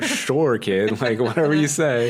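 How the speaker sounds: high, laughing, amused and humoring tone.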